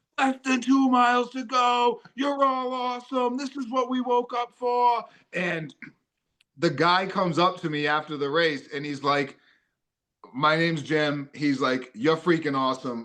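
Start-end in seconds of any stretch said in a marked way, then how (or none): 0.2-5.1 put-on very high, pumped, hyped-up cheering yell. Recalling cheering on fellow runners at mile eleven of a race, retelling own yelling and screaming. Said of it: "I'm still yelling and screaming and saying like".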